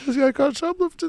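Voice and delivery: mocking, jeering tone.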